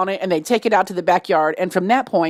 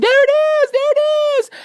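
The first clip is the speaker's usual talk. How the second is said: put-on very high, shrill screamed voice; 3 dB louder than usual. Speaker retells a rat being chased with a broom, retelling a scream. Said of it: "I'm screaming".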